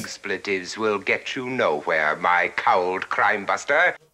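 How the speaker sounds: very low, dropped, deep bass voice. Scolding a swearing player during a movie quiz: Vincent Price voice. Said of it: "I'm just throwing out my fucking Vincent Price".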